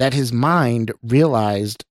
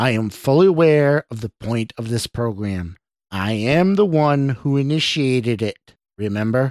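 ordinary delivery

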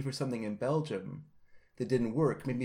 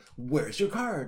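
angry, irate customs officer voice. Retelling landing in Canada from Britain, speaker plays the customs officer, imitating an angry customs officer. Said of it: "a really angry customs guy is like".

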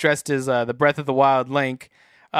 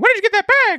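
very high, squeaky cartoon voice; 4 dB louder than usual. Repeating a lady's question about a co-host's bag, in a Mickey Mouse voice. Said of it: "she sounded like Mickey Mouse too".

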